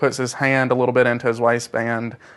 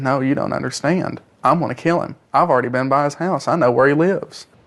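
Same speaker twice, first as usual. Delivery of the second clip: ordinary talk, nothing marked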